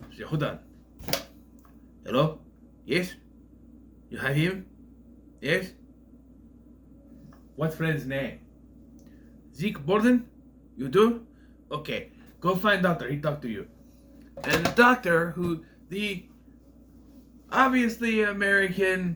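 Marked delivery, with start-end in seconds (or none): 0.3-13.7 put-on heavy, laid-on Romanian accent with broken English. Retelling a secretary's phone call, in a thick Romanian accent. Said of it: "with a thick Romanian accent tells him".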